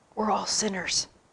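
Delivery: muttering under breath. Recounting what a lady in the class said after the meditation: retelling a mutter under breath. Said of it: "one lady says under her breath".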